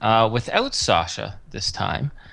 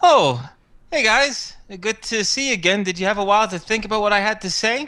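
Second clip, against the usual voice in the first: sunny, cheerful, very high-pitched voice; 9 semitones higher than usual. Narrating a serious-faced character greeting the group again, speaking cheerily. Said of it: "And cheerily, he says".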